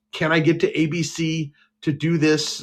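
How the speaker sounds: play-acted pleading tone, very slow and drawn out. Retelling asking to leave a job for an audition: imitating own pleading. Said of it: "I pleaded with Joe Keefe".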